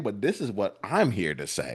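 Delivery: ordinary talk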